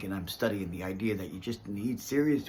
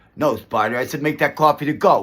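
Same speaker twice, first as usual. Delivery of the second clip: put-on very loud, high Brooklyn Italian accent, full attitude; 5 semitones higher, 15 dB louder than usual. Trading movie lines in New York, acting out a Brooklyn Italian accent. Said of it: "acting out the the Brooklyn Italian accent".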